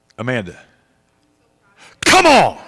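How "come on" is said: thrilled, worked-up, excited shout with swooping pitch. Suddenly remembering a name after weeks, excited yell. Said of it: "I didn't mean to yell".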